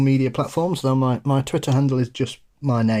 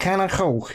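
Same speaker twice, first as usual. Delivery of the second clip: throaty Scouse accent, pitched up; 5 semitones higher than usual. Showing someone how to say a phrase, closed-throat Merseyside accent. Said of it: "close your throat a bit and go".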